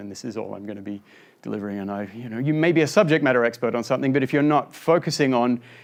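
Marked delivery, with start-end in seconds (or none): 0.0-2.1 flat monotone, lower and quieter. Explaining delivery to listeners, demonstrating how talking in a flat monotone sounds. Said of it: "talk with a monotone".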